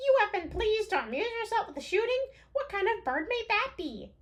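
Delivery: put-on, very high, shrill, loud goblin voice. Reading a character's questions to Levin, in a goblin voice. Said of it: "like a like a goblin voice".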